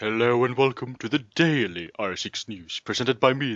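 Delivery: put-on deep voice. Opening a mock news show, the presenter introduces himself in a put-on deep voice. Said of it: "the guy with the deep voice".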